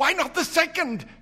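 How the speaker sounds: very high, feverish voice. Narrator voicing an old woman answering her husband at night: speaking feverishly. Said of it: "said the old woman feverishly".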